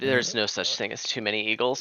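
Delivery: ordinary talk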